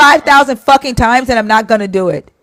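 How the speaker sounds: fired-up, heated, angry, defiant tone. Speaker refusing to be told to calm down in a heated argument: shouting.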